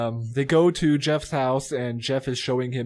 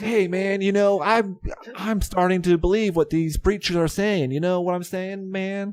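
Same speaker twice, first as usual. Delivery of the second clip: cool, hip talk with pitched-up voice; 7 semitones higher than usual. Recapping how Jeff talks to his friend Marty, imitating Jeff acting cool. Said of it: "He talks like he's trying to be cool and hip".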